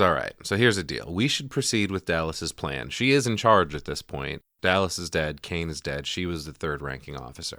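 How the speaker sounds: ordinary talk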